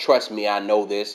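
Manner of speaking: ordinary talk, nothing marked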